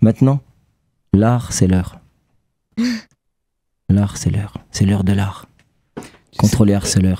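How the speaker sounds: put-on warm, cosy little voice, pitched low. Suggesting to a guest what to tell harassers, in a warm little voice. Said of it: "avec une petite voix chaude comme ça".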